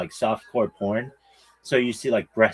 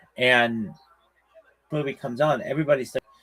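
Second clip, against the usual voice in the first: ordinary delivery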